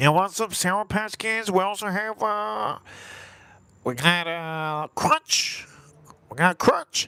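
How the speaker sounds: pinched-nose nasal voice. Showing how movie theater workers sound selling snacks, pinched-nose nasal voice. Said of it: "You gotta like close your nose".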